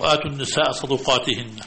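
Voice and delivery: ordinary delivery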